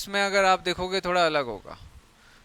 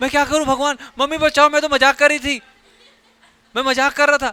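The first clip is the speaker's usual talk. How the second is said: frantic, frightened, high, fast panicked babbling; 8 semitones higher, 8 dB louder than usual. Acting out someone bleeding from a cut artery: acting scared, panicking. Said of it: "अब वो डर गया".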